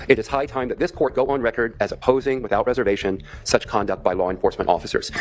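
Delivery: ordinary talk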